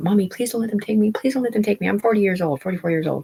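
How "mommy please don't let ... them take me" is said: mock frantic, high, panicked, breakdown-level pleading tone. Retelling being strapped to a gurney and screaming to their mom, imitating panicked screaming. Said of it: "I'm screaming to my mom like".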